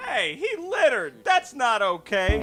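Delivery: mock outraged squeal, high and slow.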